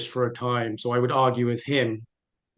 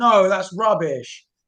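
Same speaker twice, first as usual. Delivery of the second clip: play-acted, heated, loud, high-pitched shout; 7 semitones higher, 5 dB louder than usual. Retelling arguing with a proselytizing father at night: imitating shouting. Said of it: "I'm shouting at him".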